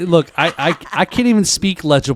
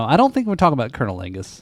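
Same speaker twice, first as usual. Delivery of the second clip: ordinary talk, nothing marked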